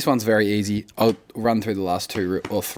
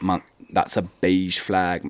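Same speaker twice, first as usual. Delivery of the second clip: slow put-on British accent; 3 semitones lower than usual. Explaining a new phrase, the speaker slips into a uk accent. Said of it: "I'm talking in the U K accent".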